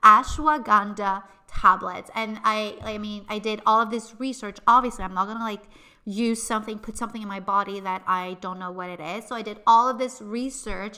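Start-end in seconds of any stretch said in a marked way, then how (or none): 0.0-2.1 "ashwagandha" said very slowly and deliberately. Struggling to pronounce an ingredient name, saying it slowly. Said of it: "I'm like really trying to say it slowly".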